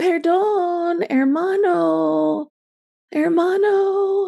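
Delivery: weak, timid, very high voice, "hermano" drawn out. Retelling a companion's call for help from a window: imitating a timid yell for help. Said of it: "she yelled like this".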